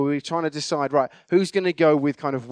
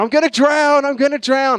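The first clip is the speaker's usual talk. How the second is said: put-on panicked cry, higher, louder, slower; 10 semitones higher, 7 dB louder than usual. Retelling a boat mishap, voicing Chris clinging to the boat: imitating Chris panicking. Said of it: "clinging on to the side of the boat going".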